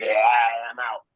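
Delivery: acted laughing. Acting out someone driving off from a man, imitating someone laughing. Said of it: "you jump in your car laughing like".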